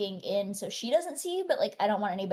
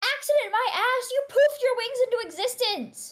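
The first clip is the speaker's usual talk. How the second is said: furious yelling, higher and louder; 6 dB louder than usual. Acting out a woman screaming at the player who just came in: screaming angrily. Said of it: "she starts screaming at me".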